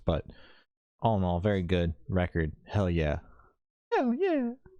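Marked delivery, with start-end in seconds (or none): 2.6-4.5 very high, swooping, sing-song rock-star cheer. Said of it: "My [name] impression".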